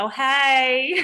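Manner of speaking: put-on Southern accent. Retelling a phone call to pay a trash bill: Southern accent. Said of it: "my Southern accent definitely comes out".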